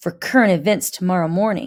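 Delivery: plain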